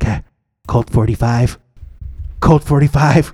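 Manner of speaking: tiny, very quiet, barely audible little voice. Speaker retells a driver beside him answering a question, in the quietest little voice. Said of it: "in the quietest little voice next to me".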